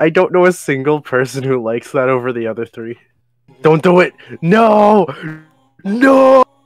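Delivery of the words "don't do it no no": very high, very slow, strained, struggling voice. A streamer reacts while playing a game: strained, struggling voice. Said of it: "I can hear the struggling in my voice".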